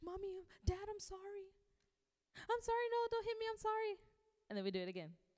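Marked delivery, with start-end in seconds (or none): 0.0-4.0 put-on very high, pleading, begging child's voice. Imitating a child apologizing to parents: imitating a child begging parents. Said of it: "like a lot of us with our parents".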